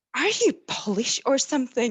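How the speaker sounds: put-on broad Scottish accent, laid on. Retelling cartwheeling in the garden, a girl asks a question in a thick Scottish accent. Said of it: "In this deepest Scottish accent".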